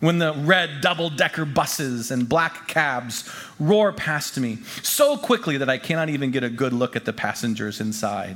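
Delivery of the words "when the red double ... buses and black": usual speaking voice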